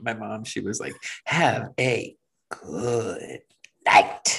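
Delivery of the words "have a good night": very slow, drawling gremlin-like voice. Explaining to the other speaker how they mimicked their mom: gremlin-like Debbie impression. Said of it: "I don't remember her sounding like a gremlin".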